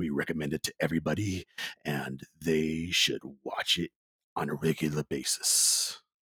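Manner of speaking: low movie announcer voice. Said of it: "I decided to go with my movie guy voice".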